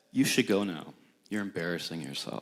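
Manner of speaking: play-acted frosty, ice-cold, very low and hushed. Retelling what a man said to the speaker, in a cold, icy voice. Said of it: "in the coldest and iciest voice".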